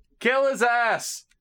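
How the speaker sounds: far-off, very high-pitched shout. Voicing a character in the game who shouts from a distance: Larxene shouting from afar. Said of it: "Larxene shouts from the distance".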